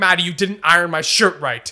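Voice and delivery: blunt, businesslike, aggressive, demanding tone. Retelling own past words to the other speaker, imitating own aggressive tone. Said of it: "And I'll say it to you like that".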